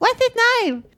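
very high, badly done put-on child voice. Retelling a little child on a bicycle asking Murdoch's name: bad child voice. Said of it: "That's my child voice".

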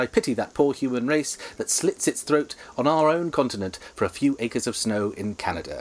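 ordinary talk, nothing marked

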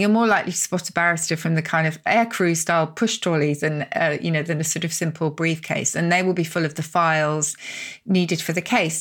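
ordinary delivery

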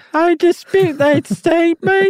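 put-on British accent, pitched very high, slow. Imitating the Tiller Girls disputing a claim: put-on British accent. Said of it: "they would say it with a British accent".

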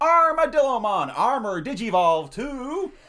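loud, slow Texan drawl. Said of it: "practice an impression of him digivolving".

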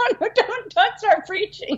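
high laughing protest.

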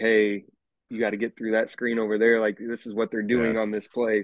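ordinary talk

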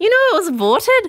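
bad, very high Manchester accent that sounds Scottish. Retelling what a man from Manchester said: failed Manchester accent, sounds Scottish. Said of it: "Wait, that's Scottish".

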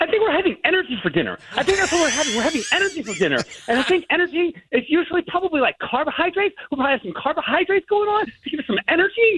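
hyped-up, excited voice at very high pitch. Asked to tell the Thanksgiving dinner plans in the speaker's hype voice: hype voice. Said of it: "What are you having for Thanksgiving dinner in your hype voice?".

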